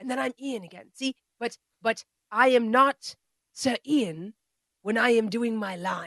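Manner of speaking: lecturing, instructor-style, workshop teacher delivery. Retelling a comedy scene of an acting workshop: imitating Ian McKellen. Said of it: "And he goes".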